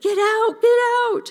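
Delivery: yelling as loudly as possible, high and frantic.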